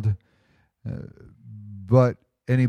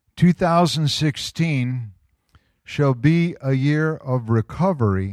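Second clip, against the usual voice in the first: somewhat slow delivery. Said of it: "I'm gonna read it kinda slow".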